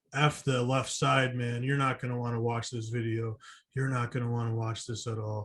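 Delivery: speaking very quietly. Retelling what a brother said while filming: imitating brother speaking very quietly. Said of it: "very quiet".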